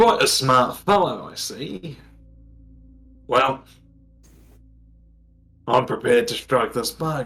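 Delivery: put-on podgy man voice. Voicing a podgy man with a wolf pelt striking a deal: Galmire voice. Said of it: "he looks at you and says".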